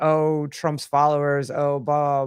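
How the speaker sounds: plain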